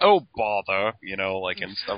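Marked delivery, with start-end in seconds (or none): 0.0-0.9 loud, put-on British accent. Imitating how Trypticon from the comic talks: Trypticon with British accent. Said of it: "I always assumed he had a British accent because he's all like".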